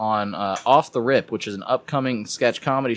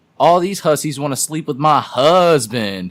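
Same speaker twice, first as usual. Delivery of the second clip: loud, long drawn-out u sound in hussies; 4 semitones higher, 7 dB louder than usual. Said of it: "Why'd you say it like that?".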